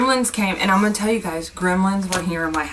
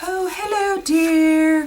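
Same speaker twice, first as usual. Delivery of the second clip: very high falsetto, "dear" drawn out; 11 semitones higher, 3 dB louder than usual. Going into her daughter's room and greeting her: Mrs. Doubtfire voice. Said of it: "I was using the voice like Missus Doubtfire".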